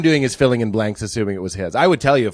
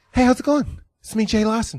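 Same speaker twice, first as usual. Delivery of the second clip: very high-pitched voice; 13 semitones higher than usual. Showing an impression that sounds like the other impression. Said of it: "my Jay Larson and my Mark Wahlberg".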